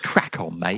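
put-on Australian accent. Wrapping up the episode with a catchphrase: put-on Australian accent. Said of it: "I went a bit Australian there".

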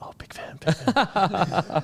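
very slow, drawn-out whisper under the breath. Retelling what they felt like saying to a rugby opponent: imitating own whisper.

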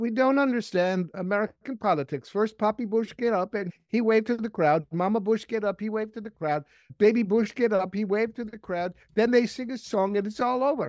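clumsy put-on Danish accent. Retelling what the Danish legislators answered Dick Sweat: very bad Danish accent. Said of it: "I'll do a very bad accent".

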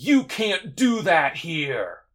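slow, dragged-out yell, like slow motion.

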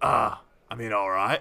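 voice of a huge, lumbering giant. Describing a giant who takes your gold and hands over a key: giant's voice. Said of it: "this giant ... And he goes".

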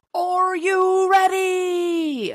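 very high, stretched-out hype-man build-up. On a podcast, asking Cass whether they're ready for the segment, like a hype man. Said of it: "let me do it like a hype man".

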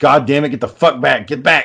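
acted-out, angry outburst voice. Retelling changing a radiator and cursing: retelling own angry outburst.

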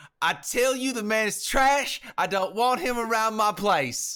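loud, angry, put-on Southern accent.

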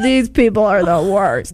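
plain

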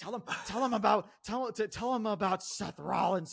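fake deep screaming voice. Imitating a boss screaming into a commentator's ear: imitating Vince McMahon's deep voice. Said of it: "in that deep fucking voice or whatever".

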